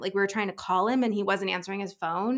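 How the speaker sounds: ordinary talk, nothing marked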